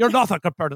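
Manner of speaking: put-on American accent. Retelling a scene from a show: Jeremy Irons doing an American accent. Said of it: "my impression of Jeremy Irons doing an American accent".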